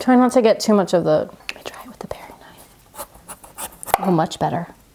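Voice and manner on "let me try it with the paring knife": very quiet, slow whisper. Cutting squash for a recipe and switching to a paring knife, whispering.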